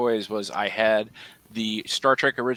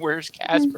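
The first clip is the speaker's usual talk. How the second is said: put-on tearful crying, higher; 7 semitones higher than usual. Retelling sitting as a child flipping channels: imitating own childhood crying. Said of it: "I'm just sitting there crying".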